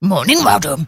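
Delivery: polite little pet dog voice. Giving a voice to the family's miniature sausage dog: deep Dolly dog voice. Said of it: "She's rather deep".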